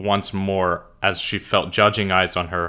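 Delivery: ordinary delivery, nothing marked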